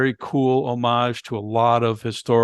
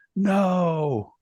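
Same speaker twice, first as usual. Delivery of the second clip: high, far-off mock cry like a distant wail. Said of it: "And the father screams".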